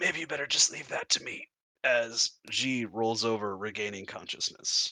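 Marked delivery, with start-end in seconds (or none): 0.0-1.5 feeble, very weak, rushed voice. Narrating a scene, voicing g regaining consciousness from the covered area; very weak voice. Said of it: "a very, very weak voice from within".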